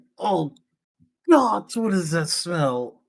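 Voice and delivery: revolted, disgusted cry. Carrying an ally when a foul smell hits, Verdre exclaims in disgust. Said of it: "He has a plus seven in con".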